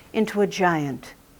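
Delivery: plain reading voice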